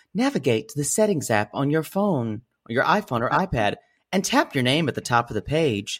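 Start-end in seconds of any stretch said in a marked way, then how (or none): 0.2-2.5 super friendly, welcoming tone. Giving instructions to open the settings app, very friendly voice. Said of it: "I'll say this in a very, very friendly voice".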